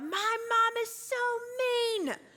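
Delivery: put-on very high, drawn-out, sassy little-kid yell. Retelling a childhood complaint about being called to dinner: imitating a sassy first-grader yelling. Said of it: "in my sassy little first grade voice, yell out".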